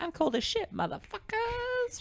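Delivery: very high-pitched, drawn-out whining voice. Imagining a movie scene, quoting a Kristen Wiig line: Kristen Wiig impression. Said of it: "You can imagine Kristen Wiig out there like".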